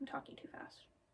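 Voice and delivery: quiet whispered aside.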